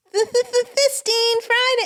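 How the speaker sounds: put-on loud, very high, kid-like childlike voice. Trying out a voice for a character, in a childlike voice. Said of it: "And that's more more childlike".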